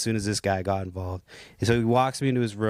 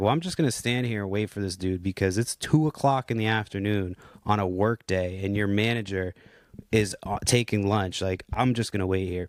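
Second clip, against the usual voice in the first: ordinary talk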